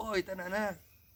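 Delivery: high-pitched frog voice. On all fours, back to the children, speaker recreates talking in a frog voice. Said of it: "falando essa voz de sapo".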